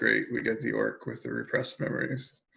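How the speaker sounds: muttering quietly to oneself under the breath. Voicing a character reacting to a raging orc: muttered to himself. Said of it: "I muttered to myself".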